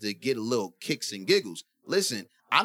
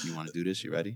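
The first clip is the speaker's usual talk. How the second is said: mock-sexy put-on voice, lower and quieter; 7 semitones lower, 7 dB quieter than usual. Speaker acts out what they say when their phone records, retelling saying it sexily. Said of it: "I say it in a sexy way".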